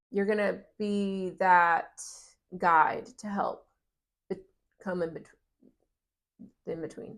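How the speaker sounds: stuttering, stammering, tripping over words. Speaking to a listener, stuttering. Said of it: "I'm stuttering".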